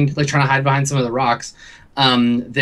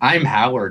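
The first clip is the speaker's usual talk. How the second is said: computery, robotic talking-computer voice; 2 semitones lower than usual. A talking octopus introduces himself to a man, computery Howard voice. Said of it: "it's coming on this like really like computery voice".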